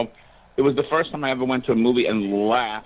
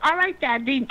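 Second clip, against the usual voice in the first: put-on very high, babyish, tiny baby voice. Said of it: "This is kind of like a baby voice".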